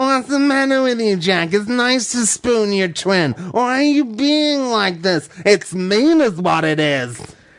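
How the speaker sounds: extra-nasal, high cartoon voice. Playing Jill asking her twin Jack why he won't spoon, nasal Snagglepuss voice. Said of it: "It's a bit more nasal".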